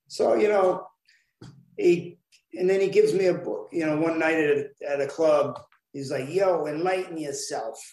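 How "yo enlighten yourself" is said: put-on strong, thick New York accent. Retelling a man handing over a book one night at a club, thick new york accent. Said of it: "in his thick New York accent".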